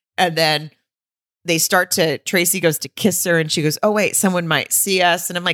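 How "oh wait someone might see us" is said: ordinary delivery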